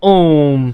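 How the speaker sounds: ओम drawn out, vowel held long. Showing how one letter gets drawn out, stretched-out vowel in ओम. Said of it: "इनमें थोड़ा सा ज्यादा समय लग रहा है, थोड़ा सा क्या, सबसे ज्यादा समय लग रहा है।".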